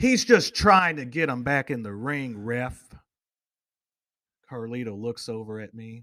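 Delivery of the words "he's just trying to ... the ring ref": loud shouting yell. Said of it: "I yell out".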